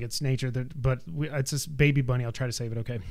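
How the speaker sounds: plain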